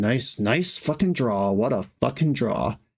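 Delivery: resentful, sour, mumbled grumbling. Retelling what the other player mumbled during sideboarding, imitating mumbling. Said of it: "he was just mumbling".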